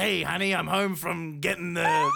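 goofy, rough, rasping, creaky put-on funny voice. Imagining a raptor in a triceratops suit pretending to come home, funny coming-home voice. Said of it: "one of them's doing a funny voice".

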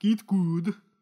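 put-on German accent. Joking that a gaming phrase is German now: put-on German accent. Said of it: "didn't like that accent".

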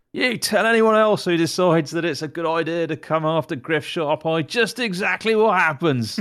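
high, full-throated yelling at the top of the lungs. A character yells after a fleeing enemy who dropped his weapon, shouting at top of voice. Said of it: "He's gonna shout at the top of his voice".

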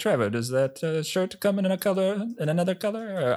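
put-on butchered Italian accent. Retelling what an italian transfer student said in a college dressing room, butchered italian accent. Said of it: "I'm butchering an Italian accent".

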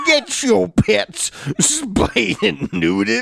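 slow British accent. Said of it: "That's my British accent".

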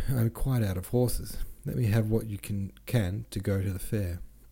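ordinary delivery

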